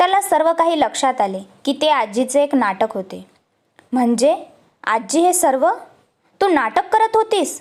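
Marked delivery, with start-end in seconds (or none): 3.9-7.6 irritated, angry, accusing, pitched up. Narrator reading a grandson questioning his grandmother about her act, asking angrily. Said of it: "शिवमने चिडून विचारले".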